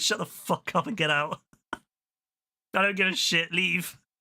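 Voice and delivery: mock-angry scolding tone, acted outburst. Retelling how he told people to get out: an angry telling-off. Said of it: "I was so pissed".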